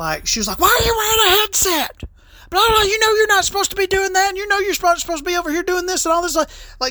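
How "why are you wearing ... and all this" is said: put-on scream, higher pitch. Retelling a lady coming up and screaming at work: imitating someone screaming. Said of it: "started screaming at me".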